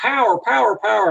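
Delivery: high, urgent mock scream, yelled out.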